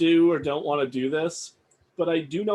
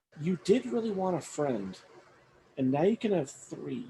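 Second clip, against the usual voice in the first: hushed, soft, fairly quiet aside; 8 dB quieter than usual. Speaking in character to Clyde, not quite whispering in his ear: said quietly. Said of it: "I will say kind of quietly".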